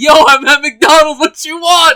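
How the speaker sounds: mock grumpy, put-out, loud, slow, annoyed voice. Retelling how Orange Man picked up the phone, imitating angry Orange Man. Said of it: "He's all mad and shit".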